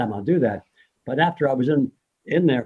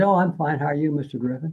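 put-on cheerful nurse voice, higher; 3 semitones higher than usual. Retelling a nurse's late-night greeting: imitating a cheerful nurse. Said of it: "she was really trying to take care of me and very cheerful".

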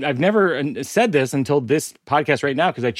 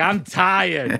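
put-on small child voice with a Boston accent; 3 semitones higher than usual. Joking that all toddlers have a Boston accent, doing a Boston toddler accent. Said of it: "all toddlers have a Boston accent".

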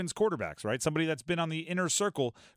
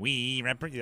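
put-on high tiny-creature voice, sometimes slightly lower; 4 semitones lower than usual. Joking about rivals celebrating a coach leaving: Lollipop Guild impression. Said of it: "a pretty good Lollipop Guild impression".

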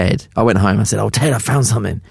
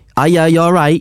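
put-on Manchester accent, much higher; 8 semitones higher, 4 dB louder than usual. Asked for a Manchester accent, the speaker has another go: Manchester accent attempt. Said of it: "I've got it".

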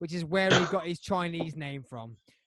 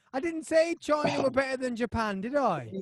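louder, higher insistent shout. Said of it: "so I can shout at y'all".

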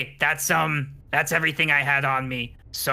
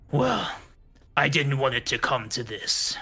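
deepened, towering, deep giant voice. Game master voicing a half-giant mage revealed mid-battle, in a deep half-giant voice. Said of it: "This is a man, an adult man, a powerful mage, and a half giant. / But his voice starts to get deeper. His vocal cords are elongating. His body is elongating. You see, as he slams back against the wall".

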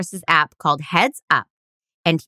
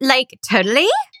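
put-on high-pitched California valley girl accent; 5 semitones higher than usual. Trying out accents with another speaker, the speaker does a valley girl voice. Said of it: "valley girl".

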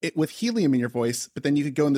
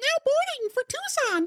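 very high airline PA announcer voice. Speaker suggests Lindsay could make airline announcements, high airline-announcement voice. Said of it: "in like a high voice saying like".

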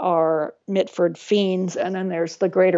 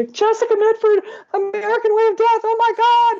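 put-on very high, thrilled, excited shrieking scream; 4 dB louder than usual. Retelling how parents ran around the house: imitating parents screaming. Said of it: "running all over the house screaming".

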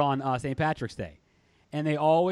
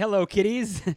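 pitched-up horror-host voice; 5 semitones higher than usual. Quoting an old pal while greeting listeners: Crypt Keeper voice. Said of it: "our old pal, the Crypt Keeper, would say".

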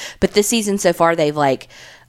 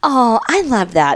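mock patronizing tone, higher; 5 semitones higher than usual. Repeating own earlier reply to show how it sounded: imitating own condescending tone. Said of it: "Is how that sounded".

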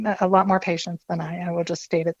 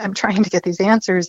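ordinary delivery

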